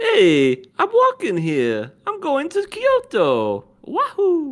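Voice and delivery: very high, loud, swooping, cartoonish video-game character voice. Joking that a character is like a Mario Luigi character: Mario voice. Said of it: "he's like a Mario Luigi character".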